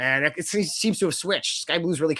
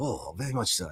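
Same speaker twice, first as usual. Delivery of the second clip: put-on Japanese accent, lower and quieter; 5 semitones lower, 7 dB quieter than usual. Showing how the accent sounds respectful: put-on Japanese accent. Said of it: "as I'm doing it".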